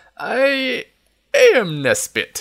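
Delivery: very high, halting, faltering, unpracticed voice. Reading a story aloud, an old man unused to speaking: faltering voice. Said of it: "in a faltering voice".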